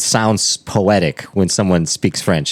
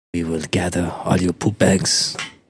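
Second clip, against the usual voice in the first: put-on French accent on English; 4 dB quieter than usual. Picturing someone underground with french helpers, the speaker voices them in a french accent. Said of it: "whenever I'm doing a French accent".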